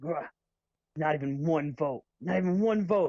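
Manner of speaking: angry, fuming, pissed-off complaining tone. Retelling a joke where the coach walks into the locker room: imitating pissed-off Brad. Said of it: "Smart can tell he's all pissed off".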